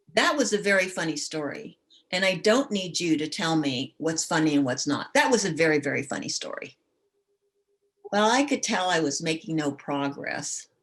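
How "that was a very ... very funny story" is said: usual speaking voice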